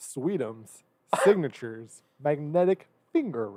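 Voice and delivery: very slow, careful, word-by-word enunciation. Reading a product name aloud as asked, very slow, enunciated. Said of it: "Can you read it very slowly".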